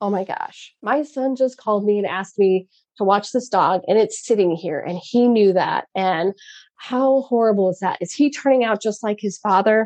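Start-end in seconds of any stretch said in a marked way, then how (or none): none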